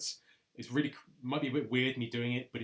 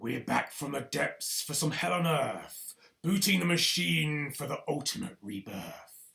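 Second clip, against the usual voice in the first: gruff, rough-edged spoken-word voice; 3 semitones higher, 4 dB louder than usual. Making another take of a poem, in a gruffer voice. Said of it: "another one with a gruffer voice".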